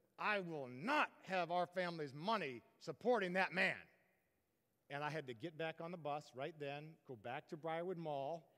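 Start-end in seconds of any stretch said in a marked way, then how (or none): 0.2-3.8 seething, loud, teeth-clenched, through gritted teeth. Retelling the speaker's mother reacting to the bought album, retelling words through gritted teeth. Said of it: "Gritted teeth, she said".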